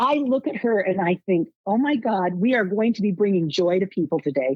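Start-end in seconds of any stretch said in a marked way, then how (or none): none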